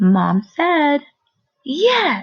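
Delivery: short pause, then loud, excited, eager yes. Teacher practicing fluency, pointing out a short pause: short pause before 'yes'. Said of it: "You hear that short pause right there?".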